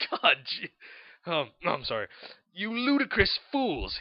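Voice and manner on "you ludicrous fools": very high, furious, angry yelling. Reading a fan fiction aloud, headmaster yelling at students: shouting angrily. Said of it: "he shouted".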